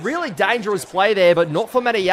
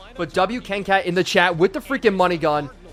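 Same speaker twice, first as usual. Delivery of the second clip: ordinary talk, nothing marked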